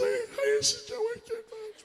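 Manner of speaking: high breathless put-on voice. Retelling how Joe would introduce himself: imitating Joe's high breathless voice. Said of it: "he could get his voice up here".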